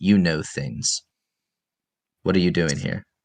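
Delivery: put-on stern older man character voice. Voicing a stern older man who spots a hiding player: voicing a stern older man. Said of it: "this very stern, older-looking man".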